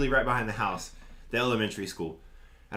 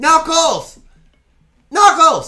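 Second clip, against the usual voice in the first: high, loud, projected yell. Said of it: "this kid starts yelling from the stage".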